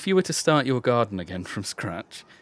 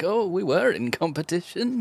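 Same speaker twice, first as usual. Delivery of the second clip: put-on very high old-man voice; 10 semitones higher than usual. Speaker imagining himself old, looking back on the competition, in an old man voice. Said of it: "my impression of me as an old man".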